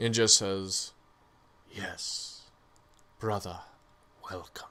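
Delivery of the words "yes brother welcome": soft whispered, echoing, two-toned double voice. Voicing a spirit that welcomes a player: two-toned whisper. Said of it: "a voice that comes out to you in kind of a whisper".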